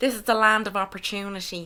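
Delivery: American accent slipped in. An irish speaker quotes a cliché about america: american accent. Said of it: "Was that your American accent".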